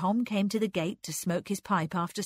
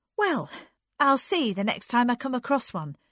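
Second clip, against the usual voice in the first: defiant tone with raised pitch; 5 semitones higher, 4 dB louder than usual. A woman answers him with a promise as their eyes meet; defiant. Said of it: "she promised defiantly".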